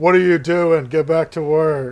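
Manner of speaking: put-on feminine giant voice. Narrating a scene to the group and voicing a giant, in a feminine giant voice. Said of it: "what sounds like possibly a feminine giant voice say".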